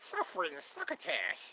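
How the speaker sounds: whispered, hushed cartoon duck voice. Running through a list of voices, doing a Daffy Duck impression. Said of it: "And then there's Daffy Duck".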